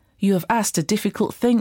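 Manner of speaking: ordinary delivery, nothing marked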